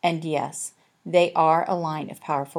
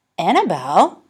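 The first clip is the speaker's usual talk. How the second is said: gasped, louder; 2 semitones higher, 9 dB louder than usual. Olive, hearing the daughter's name, gasped. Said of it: "Olive gasped".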